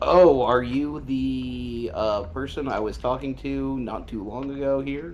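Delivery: odd, high, slow robotic machine voice.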